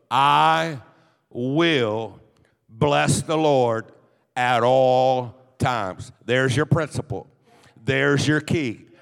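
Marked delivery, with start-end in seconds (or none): 0.1-5.3 very slow, halting, broken-up reading. A speaker reading a Bible verse for listeners to repeat back, reading very slowly. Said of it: "I'm going to read it slow".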